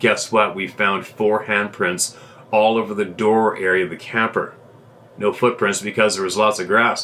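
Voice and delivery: plain reading voice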